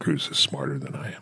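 said quietly. Making an admission about another person, in a quiet voice. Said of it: "I'll say it in a quiet voice".

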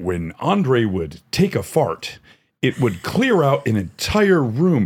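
grand ringside wrestling commentator announcer voice. Retelling what a wrestling commentator said about Andre: imitating a great announcer's voice. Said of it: "he had this great announcer's voice".

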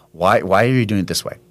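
normal talking voice

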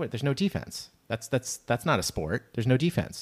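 usual speaking voice

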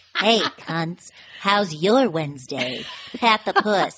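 put-on Broadway voice mixed with New Jersey accent. Asked to do the impersonation, speaker repeats a Pat the Puss impression. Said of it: "she's like born with this Broadway voice".

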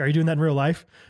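normal talking voice

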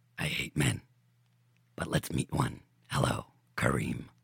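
evil, devilish demon voice of doom. Demonic figure greeting someone, devilish demon voice. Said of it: "hearing that devilish voice and grin".

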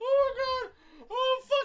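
very high, breathless speech choked with laughter. Reacting to a joke another speaker just made: laughing hard while talking. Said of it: "I can't breathe".

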